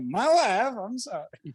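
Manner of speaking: comic put-on Eastern European accent, pitched high. Counting down ways to say sorry to your wife, in a Borat voice. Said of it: "Borat voice".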